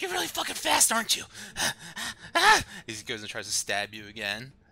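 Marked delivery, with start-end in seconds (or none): 0.0-1.2 high, loud, frustrated exasperated yell. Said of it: "he's like".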